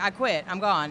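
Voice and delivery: ordinary talk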